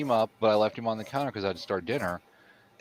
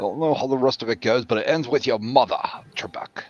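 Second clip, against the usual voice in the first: put-on Scottish-accented voice; 2 semitones higher, 4 dB louder than usual. Trying out a voice while chatting about a dog toy: Sean Connery voice. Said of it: "more like a Sean Connery voice?".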